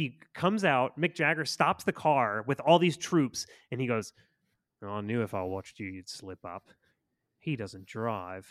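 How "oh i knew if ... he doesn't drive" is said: put-on flat movie-villain voice, pitched lower. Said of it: "can you do an impression of [name]'s performance".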